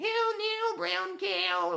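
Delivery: put-on shrill, drawn-out Brooklyn accent, stretched high and slow. Retelling an elocution scene from a film: Jean Hagen's Brooklyn accent. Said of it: "Like with this New York, um, Brooklyn accent".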